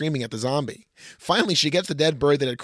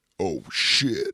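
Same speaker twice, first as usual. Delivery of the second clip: very deep undead zombie monster voice; 8 semitones lower than usual. Narrating a movie scene, voicing the zombie's line in a deep zombie voice. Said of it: "Zombie, deep voice".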